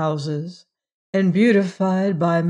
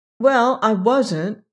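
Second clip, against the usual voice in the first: uncomfortable, uneasy, higher pitch; 4 semitones higher than usual. Rebecca answers Margaret's protest, uncomfortably. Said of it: "Rebecca said uncomfortably".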